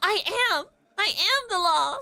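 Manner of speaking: shrill, very high-pitched yelling. In a scene, a character scolded by an establishment owner, shouting. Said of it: "stop shouting".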